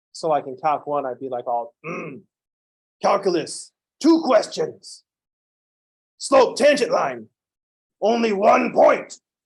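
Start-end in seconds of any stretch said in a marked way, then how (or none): 1.9-9.2 loud put-on primitive caveman voice. Showing the voice used in one calculus class, a caveman voice. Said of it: "you mean the guy that sounds like a caveman?".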